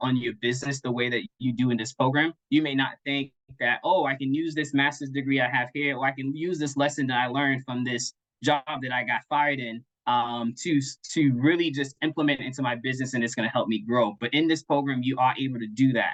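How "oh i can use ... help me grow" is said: plain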